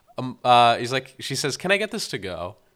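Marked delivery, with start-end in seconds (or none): 1.6-2.5 deliberately fake-sounding delivery, much faster. Retelling a film scene, quoting her line in a fake-sounding way. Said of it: "in the most fake-sounding way imaginable".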